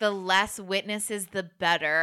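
ordinary delivery

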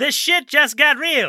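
shrill, booming, belted high and loud. Quoting a line from the film as another actor: Jon Lovitz impersonation. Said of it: "That's my Jon Lovitz impersonation".

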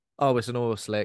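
ordinary talk

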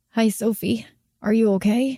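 plain reading voice

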